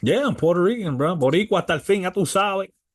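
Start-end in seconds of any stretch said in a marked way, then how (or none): none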